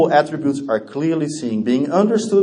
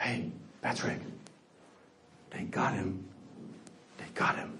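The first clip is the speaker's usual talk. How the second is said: very quiet, close, secretive whisper; 8 semitones lower, 21 dB quieter than usual. Retelling what his mother whispered in his ear: retelling a whisper. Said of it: "she whispers this in my ear".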